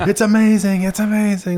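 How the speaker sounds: very high-pitched, excited exclaiming. Acting out viewers of the show running around: imitating someone shouting excitedly. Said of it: "just shouting".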